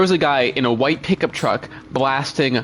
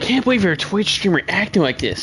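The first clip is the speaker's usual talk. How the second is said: high, dorky, nerdy put-on voice; 6 semitones higher than usual. Twitch streamer reading out another person's message on stream, in a nerd voice. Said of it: "he always does this like nerd voice when he's reading my message".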